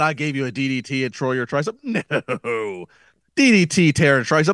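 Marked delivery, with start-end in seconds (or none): none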